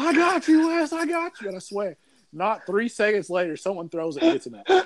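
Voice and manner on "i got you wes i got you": acted, shrill, very high-pitched yell. Telling a game story, the speaker acts out a teammate, retelling a scream. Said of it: "immediately starts screaming".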